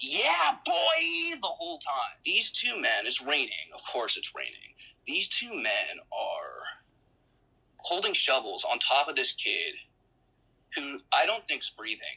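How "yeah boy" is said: put-on very high, rough holler, "boy" drawn out long. Retelling what a staff member yelled while pinning a kid: imitating staff yelling.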